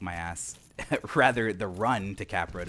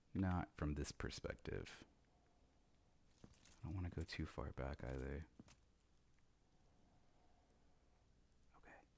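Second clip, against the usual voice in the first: whispering, lower and quieter; 4 semitones lower, 17 dB quieter than usual. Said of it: "I don't know I'm whispering".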